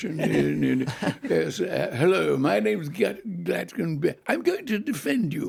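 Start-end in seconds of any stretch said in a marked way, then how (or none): 1.9-5.5 posh British accent, acted. Retelling how the lawyer who defended him spoke: imitating a terribly British lawyer. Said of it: "He was terribly British".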